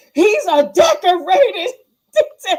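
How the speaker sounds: loud, drawn-out, put-on overacted delivery. Retelling how the actor playing the chief delivered his line: imitating an overacting actor. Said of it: "he was overacting".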